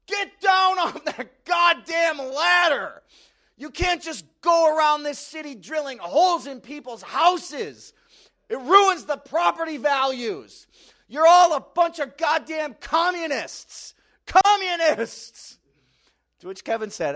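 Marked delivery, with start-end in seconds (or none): 0.1-15.6 very loud, high-pitched, shrill, drawn-out screaming tirade. Retelling how a neighbor screamed at the cable guy: imitating a screaming neighbor.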